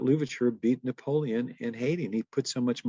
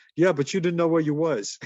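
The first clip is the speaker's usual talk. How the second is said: loud, broken, put-on Italian accent; 4 semitones higher, 5 dB louder than usual. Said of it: "in a broken Italian accent".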